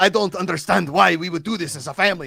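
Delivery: put-on thick Spanish accent. Retelling a show lead's line to friends, in a thick Spanish accent. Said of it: "the lead has like a very thick Spanish accent".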